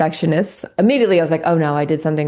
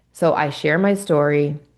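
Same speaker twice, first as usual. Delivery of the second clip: ordinary talk, nothing marked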